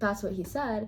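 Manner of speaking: ordinary talk, nothing marked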